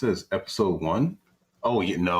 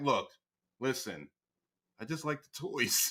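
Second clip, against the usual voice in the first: dismissive, impatient, can't-be-bothered brush-off, pitched up; 7 semitones higher, 8 dB quieter than usual. Imitating people who aren't trying to hear about Power Rangers: impatient brush-off. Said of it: "They're like".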